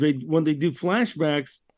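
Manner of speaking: ordinary delivery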